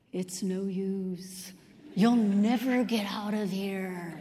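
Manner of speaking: low, stretched, spooky scary voice. Telling a joke, acting out a man trying to frighten another in his scariest voice. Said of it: "he says in his scariest voice".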